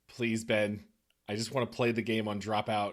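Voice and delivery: ordinary talk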